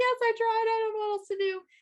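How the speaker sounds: high, teary, near-sobbing voice. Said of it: "almost crying".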